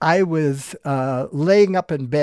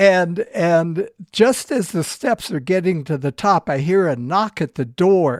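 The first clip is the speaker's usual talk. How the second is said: ordinary talk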